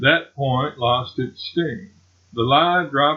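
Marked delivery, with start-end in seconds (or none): none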